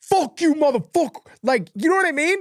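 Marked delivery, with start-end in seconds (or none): 0.1-1.2 play-acted, hostile, aggressive cursing outburst. Retelling how a rider looked at a fan: imitating an aggressive outburst. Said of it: "that was aggressive".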